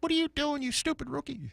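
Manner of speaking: annoyed, upset voice, very high-pitched squeal. Retelling what a star player said to him when he was a rookie, in that high voice. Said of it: "that high voice".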